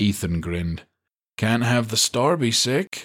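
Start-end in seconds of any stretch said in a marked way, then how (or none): 1.4-3.0 easy drawl with long, dragged, stretched-out vowels. Replying to her muttered complaint, he speaks: drawling. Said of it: "he drawled".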